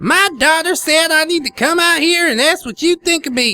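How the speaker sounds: put-on very high-pitched, thick, heavy Southern accent. Narrator voices the mother confronting the narrator, thick high-pitched southern accent. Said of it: "with an extremely thick, high-pitched southern accent. I appreciate the description. Let's try this out".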